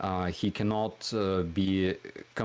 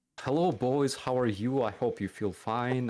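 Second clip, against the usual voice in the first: genial friendly pitched-up commander voice; 5 semitones higher than usual. Retelling how a friendly company commander greets the soldiers: imitating a friendly commander. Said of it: "he will be like".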